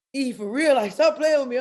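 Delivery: voice cracking and breaking, emotional and upset. Retelling a best friend's reply on the phone: imitating a cracking voice. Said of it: "his voice is cracking".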